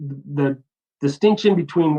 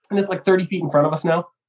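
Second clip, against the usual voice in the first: usual speaking voice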